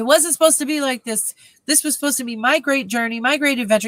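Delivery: play-acted whiny, whinging sixteen-year-old voice. Retelling a character's complaint in a story recap: imitating Harold whining. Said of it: "whining like the sixteen".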